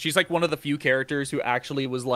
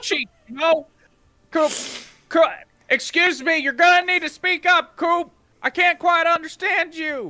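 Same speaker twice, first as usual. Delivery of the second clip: high-pitched shrill shout; 4 dB louder than usual. Play David Lynch telling Coop to speak up because you can't understand him, David Lynch yelling. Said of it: "David Lynch yelling to hug a girl".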